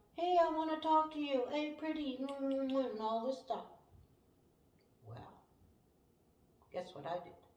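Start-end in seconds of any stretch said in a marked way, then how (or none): 0.2-2.2 brash, loud, high-pitched yelling. Speaker retells a man yelling at a girl, retelling a man's yelling. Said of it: "He's yelling".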